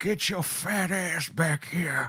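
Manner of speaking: full-on creepy, slow, drawn-out voice. Voicing a figure in a video as he pulls someone back: creepy Dalai Lama voice. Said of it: "he's doing that creepy, like, full on".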